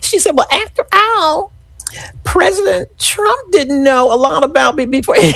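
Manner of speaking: very high voice, fighting back a giggle. Quoting what a woman said in an interview, holding back a giggle. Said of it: "I feel a giggle coming on".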